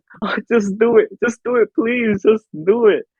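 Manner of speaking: put-on high, tearful, pleading tone. Speaker retells begging during a procedure under anesthesia, imitating their own crying plea. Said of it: "And I was crying".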